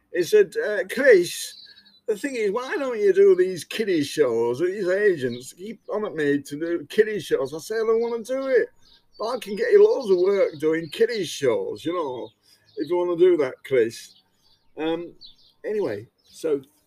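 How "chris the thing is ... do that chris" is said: put-on man's northern English Lancashire accent. Retelling what AJ once said to Chris Hare, in AJ's Lancashire accent. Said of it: "I'm going to have to do AJ's Lancashire accent".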